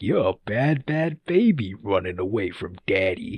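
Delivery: slow, drawn-out, sleazy dirtbag voice. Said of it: "such a funny like dirtbag voice".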